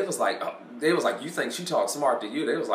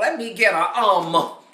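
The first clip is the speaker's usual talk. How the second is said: sassy, pitched-up, slow voice; 5 semitones higher than usual. Imitating girls ordering at McDonald's: sassy ordering voice. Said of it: "They be at McDonald's".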